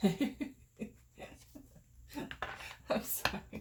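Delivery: breathy speech, laughing while getting the words out. Reading a card that makes too much sense: laughing while talking. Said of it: "I'm laughing because".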